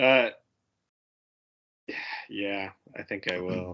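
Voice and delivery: hesitant, unsure, tentative delivery. Asked whether they're taking the shroud off, the player answers, tentative. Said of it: "I like the tentativeness in your voice".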